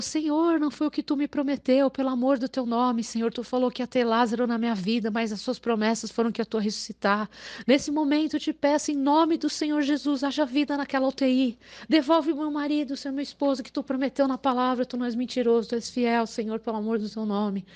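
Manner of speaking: prayer-like delivery, spoken aloud. Retelling a mother praying after bad news: imitating someone praying. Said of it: "aí ela começou a orar".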